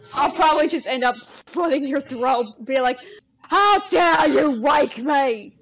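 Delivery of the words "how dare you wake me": very slow, loud, angry, menacing put-on British accent. Acting out a reply to being woken for a stream: put-on angry British voice. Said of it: "your angry voice is just British".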